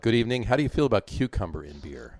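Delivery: ordinary talk, nothing marked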